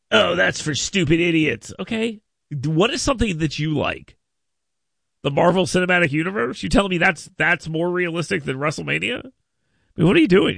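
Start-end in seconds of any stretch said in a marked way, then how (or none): 0.1-1.7 put-on haughty, snooty, dismissive snob voice. Mocking the other speaker's view of wrestling: imitating a snobby tone. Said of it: "don't be such a snob. Listen to how you sound".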